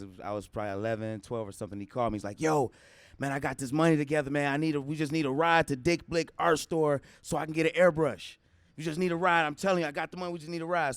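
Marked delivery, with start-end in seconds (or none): 2.4-10.9 mock excited, eager, bursting with enthusiasm. Retelling a god brother's call asking for a ride: imitating an excited caller. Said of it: "super excited, like, super excited".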